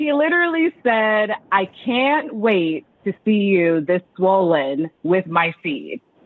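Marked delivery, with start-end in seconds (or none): 1.5-6.0 slowly and deliberately. Asked to repeat what he literally said, real slow, for those who missed it. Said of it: "that one more time, real slow".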